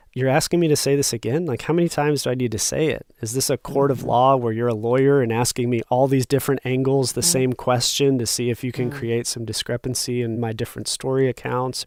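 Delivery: ordinary delivery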